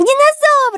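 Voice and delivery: piercing, shrill shout, pitched very high. Karandash alerts his just-woken friends, shouting. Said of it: "закричал Карандаш".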